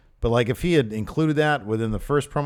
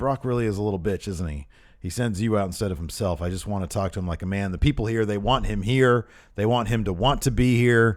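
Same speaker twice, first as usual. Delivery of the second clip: ordinary talk, nothing marked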